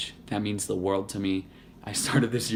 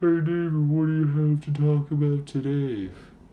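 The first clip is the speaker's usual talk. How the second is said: put-on eager, high, loud young voice. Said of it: "young viewer".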